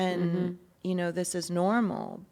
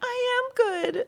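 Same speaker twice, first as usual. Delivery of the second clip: very high, tearful, crying voice with pleading tone; 5 dB louder than usual. Retelling how she would beg the man who withheld a proposal, imitating tearful begging. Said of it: "like begging".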